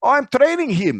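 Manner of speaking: put-on Russian accent. Retelling what a driver said from the passenger seat: imitating a russian accent. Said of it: "that was definitely Russian".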